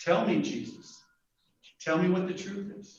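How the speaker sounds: curious, probing, inquisitive whisper. Trying out one possible tone for a quoted question: inquisitive. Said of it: "Could have been um, inquisitive".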